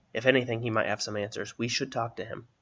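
ordinary delivery

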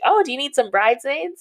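high, teasing, joking yell.

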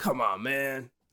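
impatient, nagging cartoon dude voice. Speakers recall Sonic tapping his feet when left idle, 90s Sonic voice. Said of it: "that feels like more of a Sonic from the 90s voice".

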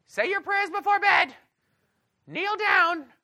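very high, loud mother's voice. Recall what your parents normally said about prayers, imitating your mother's voice. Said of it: "This is my voice from my mother".

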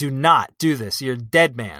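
put-on furious voice. Talking about Abraham, the speaker quotes God, imitating a furious God. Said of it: "God is like more furious".

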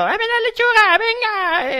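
loud, high shout. Imitating beings who go around with a cart: imitating someone shouting. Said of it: "van con un carro y gritando".

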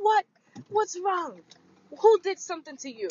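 put-on Trinidadian grandmother voice, pitched very high. Retelling an older lady asking what's wrong: Trinidadian grandma accent. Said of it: "this Trinidadian grandma".

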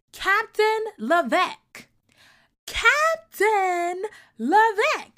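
piercing, shrill, very high-pitched repeated screaming. Recounting a woman calling for the captain at a family party, imitating a woman screaming. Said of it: "She starts screaming".

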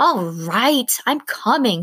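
fed-up, exasperated cry, very slow. Winnie answers a firm voice calling from the window with an exasperated cry. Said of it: "she cried, exasperated".

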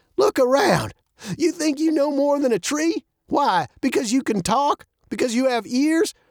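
high voice, feigning offense, offended-sounding. An old man replies to Maddie's giggling remark, as if offended. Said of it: "as if offended".

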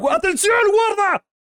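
very high-pitched shouting. Before talking about anime spoilers, the speaker warns viewers, shouting. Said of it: "voy a gritar".

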